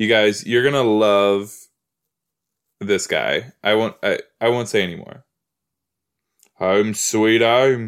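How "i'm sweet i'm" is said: put-on, imitated British accent. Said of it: "he uses his accent".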